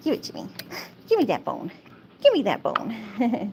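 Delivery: swooping, sing-song talking dog voice. Voicing the pet husky's demands during fetch: voicing the dog. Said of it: "She said".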